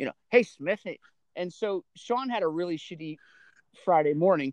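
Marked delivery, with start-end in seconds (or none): 0.3-1.0 weird, off-kilter, teasing put-on voice. Retelling how the older son calls out: imitating Sean's weird voice. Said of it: "Sean always talks in the weird voice".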